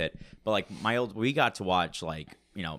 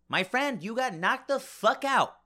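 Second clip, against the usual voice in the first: acted squeaky, very high wiseguy tough-guy gangster voice. Speaker acting out Joe Pesci auditioning for Friday, doing a Joe Pesci impression. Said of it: "this is Joe Pesci auditioning for Friday".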